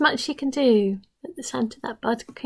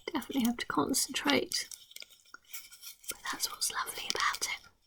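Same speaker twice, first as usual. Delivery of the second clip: hushed, soft whisper, barely voiced throughout; 12 dB quieter than usual. Quoting a woman while demonstrating tucking in a flap, whispering. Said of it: "I don't know why I'm whispering".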